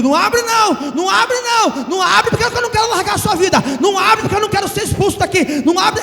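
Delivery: put-on high demon voice, yelling. Preaching about spiritual warfare, acting out the demon in one's ear: acting out a demon shouting. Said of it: "o demônio tá gritando no seu ouvido".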